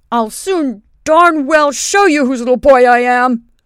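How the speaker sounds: fierce, ferocious, very loud outburst. A little boy retorts to a colonel on horseback, in a ferocious voice. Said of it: "retorted Benjamin in a ferocious voice".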